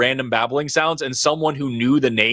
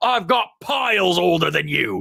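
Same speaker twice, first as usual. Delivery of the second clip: bad English accent, pitched up higher; 5 semitones higher than usual. Quoting a comedian's comeback to a heckler, as a bad Sean Lock impression. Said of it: "I'm doing a terrible accent".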